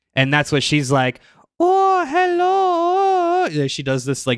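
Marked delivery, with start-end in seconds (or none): 1.6-3.5 hello stretched way up high. Recapping a show and imitating the character Drusilla: Drusilla voice. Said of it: "she has this voice throughout the whole thing".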